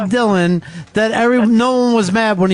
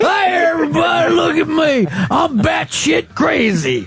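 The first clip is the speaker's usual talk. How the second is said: put-on dumb Southern accent, pitched up; 7 semitones higher than usual. Speaker doing his one and only impression for listeners: dumb southerner impression. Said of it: "I'm going to do my impression of dumb Southerner".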